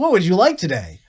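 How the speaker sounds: obvious synthetic AI assistant voice. Retelling a drive-in order, the speaker voices the ordering machine: obvious ai voice. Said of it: "there's just this obvious A I voice that goes".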